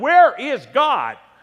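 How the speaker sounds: stern, high-pitched, booming bellow. Telling a story where a priest questions a boy a third time, bellow. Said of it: "raised his voice even more and shook his finger in the boy's face and bellowed".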